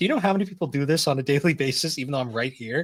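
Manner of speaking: full of sass and attitude. Retelling how a hotel desk attendant in a game scolds you: imitating a sassy desk attendant. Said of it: "she gets all sassy with you".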